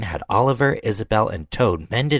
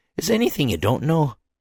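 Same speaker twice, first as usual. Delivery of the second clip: surprised, high, breathless gasp; 6 semitones higher than usual. Reading a story aloud, Douglas asking the Fat Controller: gasping. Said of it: "gasped Douglas".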